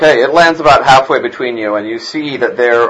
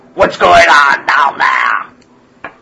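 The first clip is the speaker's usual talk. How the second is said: creaky, slow, rough snarling goblin voice; 3 semitones higher than usual. Voicing a goblin calling down to the group: snarling goblin. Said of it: "one of them snarls at you guys".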